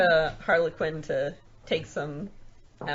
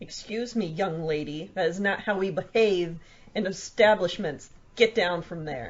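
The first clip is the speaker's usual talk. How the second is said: firm, stern, reproving motherly voice; 2 semitones higher than usual. Voicing characters reprimanding a young woman in a game scene, mom voice. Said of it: "She mom voiced my my familiar".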